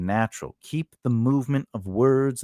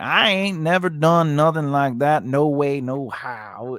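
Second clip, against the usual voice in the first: thick Southern accent, higher pitch; 3 semitones higher than usual. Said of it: "in his heavy Southern accent".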